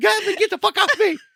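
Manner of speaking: very high, startled, panicked shriek. Retelling how the other speaker woke from a dream: imitating someone screaming. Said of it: "you're screaming like".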